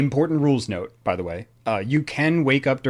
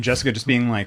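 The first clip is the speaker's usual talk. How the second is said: ordinary talk, nothing marked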